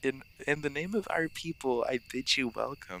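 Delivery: cute, nerdy, slow voice. Trying out a character voice at the other speaker's suggestion: cute nerdy Remy voice. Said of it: "like a cute kind of nerdy".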